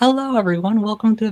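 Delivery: very high, loud, squeaky voice. Imagining narrating Spooky Saturday, opening with a high-pitched voice. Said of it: "I can't have my high pitched voice narrating Spooky Saturday, like".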